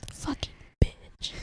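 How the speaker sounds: put-on whisper.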